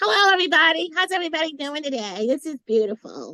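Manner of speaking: goofy, high, silly put-on funny voice. Asked whether they do voices for their characters, the speaker shows one: silly character voice. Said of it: "you do like certain voices for all of".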